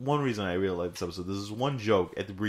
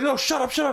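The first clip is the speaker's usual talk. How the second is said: very high, mild, gentle voice; 4 dB louder than usual. Retelling a mystery story, the speaker imitates a man's soft voice. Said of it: "It's so soft".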